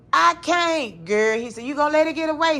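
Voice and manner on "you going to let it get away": play-acted, annoyed, demanding tone in high voice. Retelling a spider scare, quoting the husband: imitating husband getting mad. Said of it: "So he got mad".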